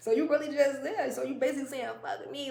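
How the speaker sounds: high, loud, fast, salty mocking taunting tone.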